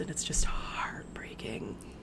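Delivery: hushed, heartbroken whisper, slow, soft and unvoiced, falling away.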